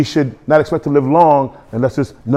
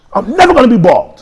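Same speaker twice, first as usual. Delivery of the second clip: put-on very high, loud, forceful, aggressive voice; 9 semitones higher, 5 dB louder than usual. Retelling a boast from teenage years: imitating an aggressive declaration. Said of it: "I would say it, like, so aggressively".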